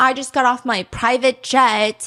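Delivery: obnoxious, show-off, bragging influencer voice. Imitating a video's obnoxious social media influencer persona: imitating an obnoxious influencer persona. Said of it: "alter ego of, like, a social media influencer, like, total asshole".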